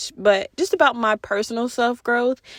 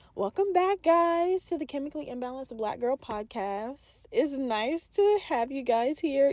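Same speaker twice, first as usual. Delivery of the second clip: soft voice with an audible smile throughout; 4 semitones higher, 8 dB quieter than usual. Podcast host welcoming listeners back to the show, smiling while speaking. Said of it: "You can tell that I'm smiling... you can just hear the teeth".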